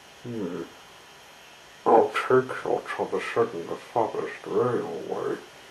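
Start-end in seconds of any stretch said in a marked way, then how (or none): none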